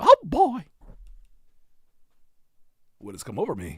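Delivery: high, squeaky little cartoon mouse voice. Act out Walt Disney doing his character voice, in a Mickey Mouse voice. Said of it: "his Mickey Mouse voice".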